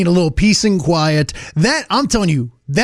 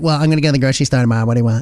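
put-on sassy, attitude-laden tone; 6 semitones lower than usual. Retelling what the wife said before her grocery trip: imitating wife's sassy tone. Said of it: "Why is she so sassy".

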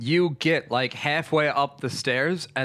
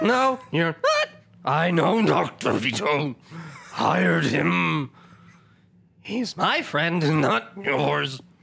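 put-on slow, echoing, disembodied villain character voice; 3 semitones higher than usual. Game master voicing the unseen doctor, answering a player claiming to be Dr. Vito, echoing voice.

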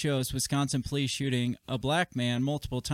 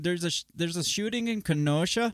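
put-on Canadian accent, pitched up, sliding onto "Kenosha"; 5 semitones higher than usual. Showing that Kenosha can't be said without a Canadian accent: put-on Canadian accent. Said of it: "impossible to say Kenosha without a Canadian accent".

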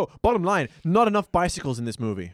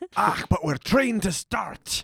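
fake, put-on Scottish accent; 3 semitones higher than usual. Joking that the school worker is a Scottish agent: put-on Scottish accent. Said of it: "the best Scottish accent I'm ever gonna do".

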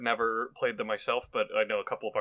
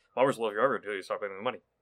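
very rapid, rattled-off fine-print disclaimer style read. Co-host playing the contract's fine print: fast fine-print disclaimer voice. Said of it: "I'm the voice that talks really fast".

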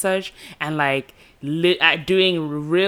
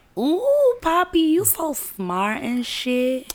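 put-on impressed girl voice, higher pitch; 12 semitones higher than usual. Acting out how a girl reacts to a pickup line: imitating an impressed girl. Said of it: "she'll be like".

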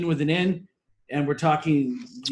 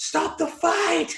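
put-on high-pitched mild yell; 13 semitones higher than usual. Retelling a fight that a commentator wanted stopped: imitating Dan Hardy screaming. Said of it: "you can hear Dan Hardy scream".

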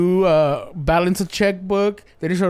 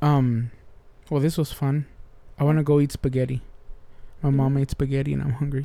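sad, glum, downcast, mopey voice; 4 semitones lower, 4 dB quieter than usual. Wrapping up the conversation with the other speaker, sounding sad. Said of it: "That sounded really sad".

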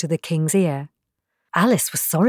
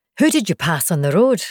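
plain

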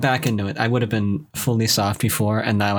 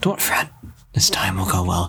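whispery voice, lower pitch; 4 semitones lower than usual. Voicing a character during a recording session, in a whispery voice. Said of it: "the whispery voice I have".

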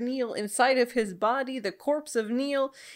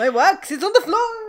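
bad put-on French accent, higher and louder; 7 semitones higher, 7 dB louder than usual. Voicing the candlestick character fleeing with Belle: bad French accent. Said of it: "I apologize to everyone here with a French accent".

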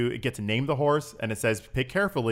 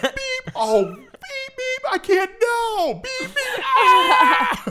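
put-on panicking voice, higher and louder; 8 dB louder than usual. Retelling a friend reacting live to a game scene: imitating Lewis freaking out. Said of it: "my best rendition of Lewis doing this".

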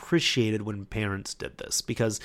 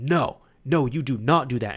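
put-on firm, raised, scolding voice; 3 semitones higher, 4 dB louder than usual. Retelling a mother scolding her kid at a counter, retelling a stern, raised voice. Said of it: "very sternly, she like raised her voice".

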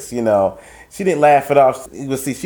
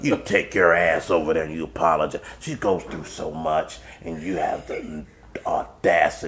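put-on smoker's voice, lower and quieter; 8 semitones lower, 6 dB quieter than usual. Retelling how a coworker scolded him: imitating Beanie's smoker's voice. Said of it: "she had that smoker's, that smoker's voice".

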